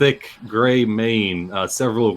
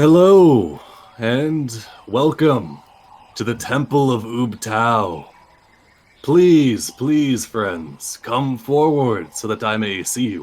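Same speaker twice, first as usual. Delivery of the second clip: stately, grand ceremonial delivery; 2 semitones higher than usual. Narrating a scene, voicing the greeting from the back of the chamber, booming voice. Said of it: "you hear a booming voice".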